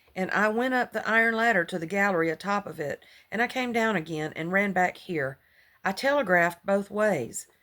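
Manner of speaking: ordinary talk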